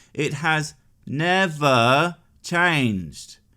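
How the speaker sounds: very slow, word by word, never drawn out. Stating a point slowly for the kids in the back: slow, deliberate delivery. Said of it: "I'll say it slowly for the kids in the back".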